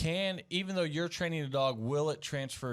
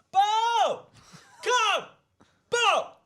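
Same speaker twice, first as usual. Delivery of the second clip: shrill, very loud, very high, passionate yelling; 10 dB louder than usual. Retelling a video where the mom calls the dog: imitating mom yelling. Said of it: "Mom's yelling".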